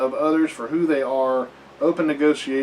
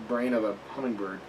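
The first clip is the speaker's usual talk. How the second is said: ordinary delivery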